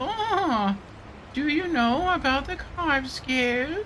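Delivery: very high, very slow, drawn-out dubbed character voice. Comparing a character's English and Japanese voices, high-pitched English dub voice. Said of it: "In English, it's like high pitched".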